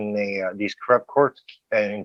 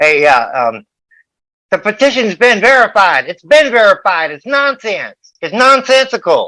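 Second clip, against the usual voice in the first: very high, very loud, shrill, hammy lawyer voice; 11 semitones higher, 10 dB louder than usual. Mocking a lawyer to put him on blast: Tervinen impression. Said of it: "my impression of Tervinen".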